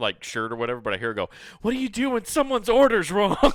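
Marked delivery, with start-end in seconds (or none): 1.6-3.4 frantic, very high panicked voice. Retelling what the speaker overheard her ask on the phone, imitating a panicked question. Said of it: "In like the most panicked voice ever".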